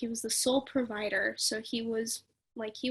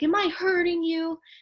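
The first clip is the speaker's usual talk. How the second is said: mocking, goading, raised high taunting jeer; 7 semitones higher, 7 dB louder than usual. Retelling how she would sit there: imitating a taunting tone. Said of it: "sit there taunting me".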